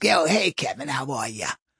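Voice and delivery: deep, low, longtime-smoker's voice. Describing how smokers sound, he voices a lady greeting him in Edna's deep smoker voice. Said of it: "like if a lady talks like this".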